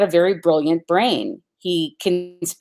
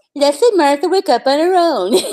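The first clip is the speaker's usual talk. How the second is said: high, loud, acted, taunting, mocking echo; 9 semitones higher, 5 dB louder than usual. Retelling how he repeated a woman's words back at her: mocking repetition. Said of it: "Totally mocked it".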